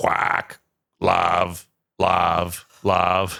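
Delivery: very slow, creaky, rough talking-duck voice. Retelling how a character mocked a duck that says words: imitating a talking duck. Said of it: "He's just like".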